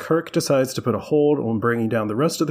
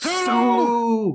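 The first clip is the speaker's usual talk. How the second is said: high-pitched shouting. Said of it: "he just screams".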